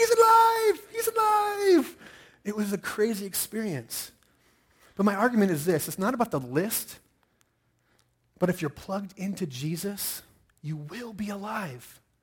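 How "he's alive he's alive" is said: panicked, shrill, very high, very loud, drawn-out scream. Retelling a German lady running away from him: imitating someone screaming.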